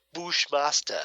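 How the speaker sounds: over-the-top, exaggerated Jamaican pronunciation of the name. Retelling how Bushmaster pronounces his name: Bushmaster's exaggerated Jamaican accent. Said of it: "In that rather exaggerated Jamaican accent".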